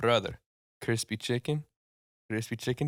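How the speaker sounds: bad Mexican accent that comes out Eastern European. Speaker imitates a man who later slides them a five: bad Eastern European-sounding Mexican accent. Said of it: "worst, most Eu- Eastern European sounding Mexican accent".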